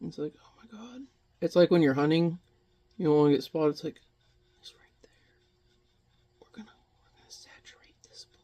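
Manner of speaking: tense whisper. Mixing paint and feeling tense, talking to viewers: whispering. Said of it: "I'm whispering because I feel really tense".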